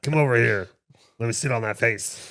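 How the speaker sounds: teasing voice, put on. Mimicking the other speaker for laughs: imitating the other speaker. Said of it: "that's a you impression".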